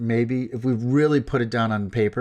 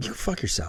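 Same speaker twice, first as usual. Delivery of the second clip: put-on muttering under breath, lower and quieter; 4 semitones lower, 7 dB quieter than usual. Retelling a reply to an apology, imitating muttering under breath. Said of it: "under my breath, I was like".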